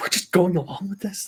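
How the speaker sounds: hushed, breathy whisper under the breath. Speaking in character to another player behind the host's back: whispering.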